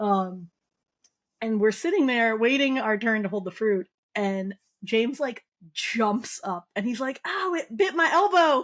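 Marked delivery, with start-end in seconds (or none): 7.3-8.6 mock high, drawn-out childish scream. Retelling when James, a kid, jumped up while they waited to hold the fruit: imitating James screaming. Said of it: "he like screamed".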